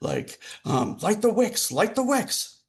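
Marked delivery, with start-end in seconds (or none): 1.0-2.5 shrill, very high, loud shouting. Narrating her turn, the speaker voices a character's command: shouting orders. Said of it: "she's shouting".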